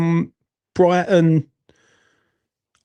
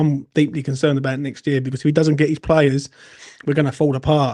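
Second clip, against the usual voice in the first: ordinary talk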